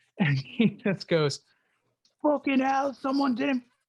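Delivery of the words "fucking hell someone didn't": put-on failed British accent, pitched very high. Quoting what a man said about an unfixed ball mark, in a bad british accent. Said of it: "I can't do a British accent".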